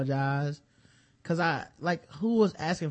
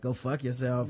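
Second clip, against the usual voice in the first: normal talking voice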